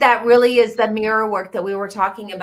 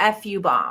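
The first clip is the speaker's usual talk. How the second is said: ordinary talk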